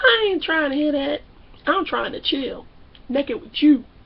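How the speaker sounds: whiny, pleading tone with crying. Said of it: "Jay, Jay".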